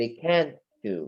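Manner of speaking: brief pause at the t in can't. Showing learners how to tell can't from can: brief pause at the t in can't. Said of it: "بقف pause لحظة في ال T".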